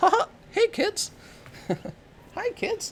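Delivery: squeaky voice, under the breath. Trying out a cartoon voice while wondering how it's done: Mickey Mouse voice. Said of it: "How do you do the Mickey Mouse voice".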